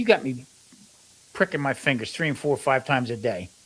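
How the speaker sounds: ordinary delivery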